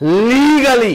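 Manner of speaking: heavy stress on the word "legally". Warning listeners about leaders taking oil money: stress on legally. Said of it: "You hear how I'm emphasizing that word?".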